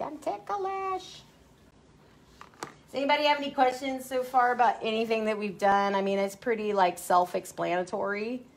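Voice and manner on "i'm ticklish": high, slow, silly put-on dog voice. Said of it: "she's gonna be like".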